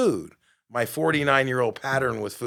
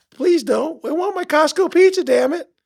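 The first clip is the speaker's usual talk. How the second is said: put-on shrill, very high, very loud little-kid voice; 9 dB louder than usual. Retelling an inner argument about whether to keep juicing: child voice. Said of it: "the child voice is like".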